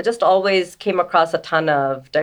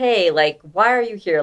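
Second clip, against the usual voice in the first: mock condescending tone; 3 semitones higher than usual. Retelling how strangers approached them: imitating a condescending tone. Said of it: "a very condescending tone".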